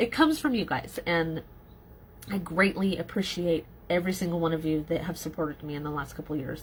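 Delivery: teary voice catching, close to tears. Thanking supporters of the last couple of years, teary, choking up. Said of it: "I'm getting teary-eyed".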